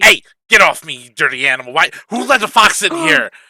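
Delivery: angry character voice. Voicing a bookie pushing off an animal: bookie character voice. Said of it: "you hear the bookie being like".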